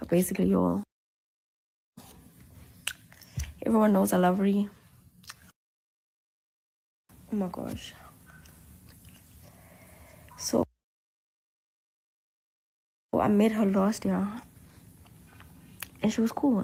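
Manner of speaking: raspy, hoarse voice, just woken up. Just woken up and talking to viewers before a clip, raspy just-woke-up voice. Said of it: "I just woke up. My voice is raspy".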